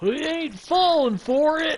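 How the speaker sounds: high, slow, loud hollering shout. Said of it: "I hear this voice go".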